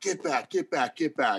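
put-on repeated high yell. Retelling yelling at a player from the sideline: imitating own past yelling. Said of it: "I'm yelling at him".

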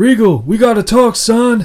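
high, booming bumpkin drawl. Retelling a scene where the American bursts in: hick voice. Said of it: "impression number one".

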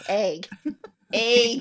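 egg said with a wide-open mouth. Showing how they pronounce the word, saying egg with a big mouth. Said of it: "I do say it with a big mouth".

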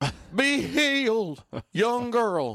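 put-on Southern US accent. Acting out someone casting a demon out of a girl, Southern accent. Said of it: "Only in a Polish accent instead of this southern one".

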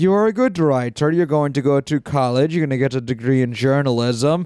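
ordinary talk, nothing marked

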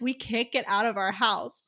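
usual speaking voice

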